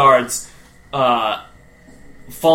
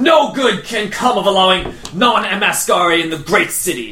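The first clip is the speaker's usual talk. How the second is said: sharp, snappy delivery. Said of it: "he snaps back saying".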